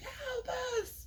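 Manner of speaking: high put-on scream. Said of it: "people inside are screaming".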